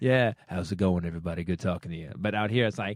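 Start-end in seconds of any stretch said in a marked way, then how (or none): 0.0-2.1 very deep, cool-sounding voice, pitched way down. Showing how he sounds in his head, James Earl Jones deep voice. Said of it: "I sound like James Earl Jones in my head".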